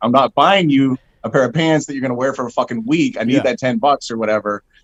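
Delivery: plain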